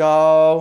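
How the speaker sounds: gao in a flat, level robot monotone. Teaching a syllable's sound, said like a robot: flat robot-like tone on gao. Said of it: "say with a flat tone like you're a robot".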